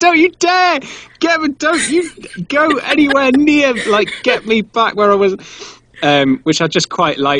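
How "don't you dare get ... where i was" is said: put-on, mock screaming and crying, higher. Retelling the story of a log carried home, mock screaming and crying. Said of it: "cries and screams all the way home".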